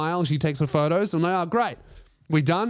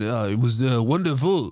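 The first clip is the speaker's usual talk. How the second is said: English words said in a put-on French accent; 5 semitones lower than usual. Imagining coming out of an X-ray to his girl: put-on French accent. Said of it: "You have a French accent?".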